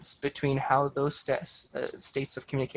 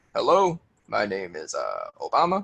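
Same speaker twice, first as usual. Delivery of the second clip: slow, low, swooping delivery; 5 semitones lower than usual. Showing how to speak slowly, with an Obama impression. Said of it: "Practice envisioning how Obama sounds".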